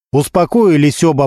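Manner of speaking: ordinary delivery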